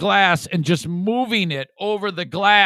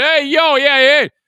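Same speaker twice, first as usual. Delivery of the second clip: brash, obnoxious screaming, loud and high; 6 semitones higher, 5 dB louder than usual. Describing an obnoxious East Coaster, imitating someone screaming. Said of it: "like he's screaming".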